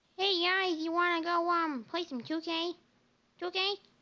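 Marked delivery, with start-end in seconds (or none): 0.2-2.8 put-on squeaky voice. Imitating a friend who naturally has a squeaky voice, Brayden squeaky voice. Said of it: "He naturally has a squeaky voice. Yeah, he talks".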